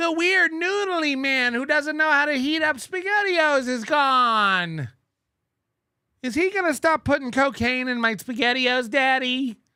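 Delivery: put-on little kid voice. Imitating a man's child asking Daddy a question, in a little kid voice. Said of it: "It's my impression of Nick's kids".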